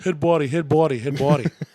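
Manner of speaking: loud, put-on Boston accent, repeated like a drill. Quoting a line from The Fighter over and over: Boston accent. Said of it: "saying head body in a Boston accent".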